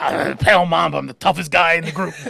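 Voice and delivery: fake gravelly tough-guy voice. Imitating the self-styled toughest guy in a hip hop group, put-on gravelly voice. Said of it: "with a put on gravelly voice".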